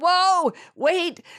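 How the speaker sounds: high, loud, panicked cry.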